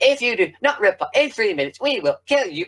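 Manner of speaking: very high, sing-song robotic voice. Speaker recalls how the Cybermen talk in episode four, high-pitched Cybermen voice. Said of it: "Cybermen have really high pitched voices".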